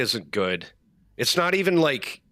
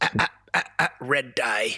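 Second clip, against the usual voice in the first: goofy put-on voice. Imitating the uncle who would be the wrestler's manager: goofy RFK Jr. voice. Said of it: "he's got it with that goofy ass voice".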